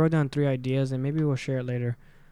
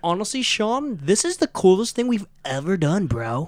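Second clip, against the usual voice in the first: put-on, pitched-up preppy kid voice; 6 semitones higher, 3 dB louder than usual.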